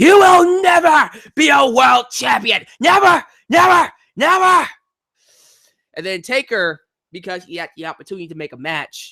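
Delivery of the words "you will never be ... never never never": very high, loud, bellowing yell. Retelling a wrestling story, the speaker yells at the wrestler in Vince McMahon voice. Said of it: "he yells at him and his Vince McMahon voice".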